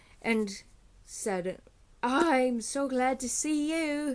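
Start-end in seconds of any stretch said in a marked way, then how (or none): 2.0-4.2 deliberate put-on child's accent, high-pitched and slow. Retelling a scene where the kid hugs a townsman: imitating a kid's accent. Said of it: "sorry about the accent".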